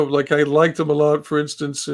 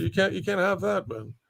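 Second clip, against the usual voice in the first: ordinary delivery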